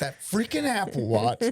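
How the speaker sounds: high-pitched, mock fed-up, furious outburst. Telling a spouse on their podcast how a call ended, retelling a furious outburst. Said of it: "I was like".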